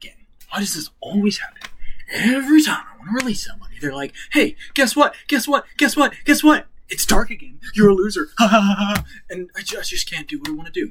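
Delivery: mumbling under breath. A game master voices a character who does not see the player, mumbling to himself. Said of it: "He's mumbling and he's saying".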